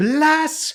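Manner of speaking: very high, shrill, loud shouted cry. Voicing a cult priestess denouncing the party: priestess shouting in character.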